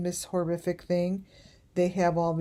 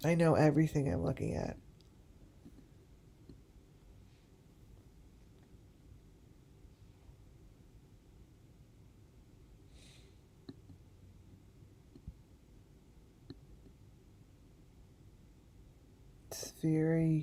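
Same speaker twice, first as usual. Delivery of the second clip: emotional and quieter; 8 dB quieter than usual. Looking at the pieces here and identifying each one: getting emotional. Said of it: "Now I'm getting emotional".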